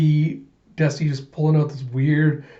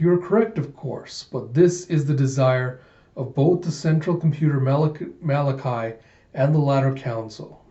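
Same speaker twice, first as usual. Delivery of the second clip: ordinary talk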